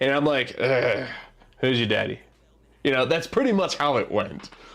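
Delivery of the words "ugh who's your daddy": dead-tired, smoker-sounding voice. Telling an embarrassing story, redoing what they said to a kid, imitating own smoker's voice. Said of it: "I sounded like I had a smoker's like voice".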